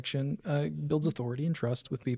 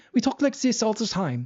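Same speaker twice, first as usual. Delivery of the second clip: put-on German accent in English; 6 semitones higher than usual. Showing what the German accent is like, in a put-on German accent. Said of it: "the German accent's more like this".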